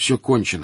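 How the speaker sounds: ordinary delivery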